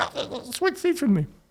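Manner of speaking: wired, over-caffeinated, jittery, very high voice. Retelling how someone begged to switch seats: imitating someone cracked out. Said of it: "cracked out".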